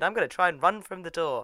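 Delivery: ordinary delivery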